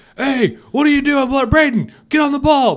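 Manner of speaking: put-on shrill, loud barking coach yell. Acting out a coach scolding a player: imitating a yelling coach. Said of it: "Next time a coach starts yelling".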